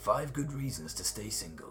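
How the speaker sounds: put-on movie trailer announcer voice. Quiz host reads a 1994 film's tagline for the guesser, in movie trailer voice. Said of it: "I'll do the voice as well".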